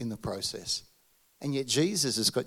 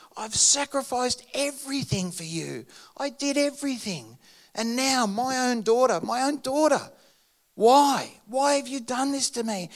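play-acted furious, angry, high-pitched shouted scream; 12 semitones higher, 5 dB louder than usual. Retelling how a pastor fell on his knees in a park: imitating an angry scream. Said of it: "he was so angry, and he's screaming out at God".

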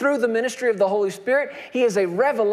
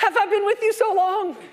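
mock exasperated frustration, pitched very high; 10 semitones higher than usual. Retelling a scripture scene, the speaker acts out a reply with put-on frustration. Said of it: "you can nearly hear the frustration in Jesus' voice".

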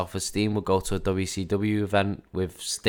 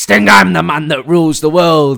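very loud, high-pitched bellow; 8 semitones higher, 15 dB louder than usual. Joking about a catchphrase, imitating Sid. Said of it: "It's like".

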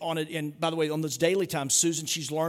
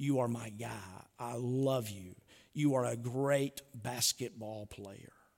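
quiet, soft, hushed half-whisper; 5 semitones lower, 7 dB quieter than usual. Speaker retells one man half-whispering to another during a hug: imitating a half-whisper. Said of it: "And he whispers to him".

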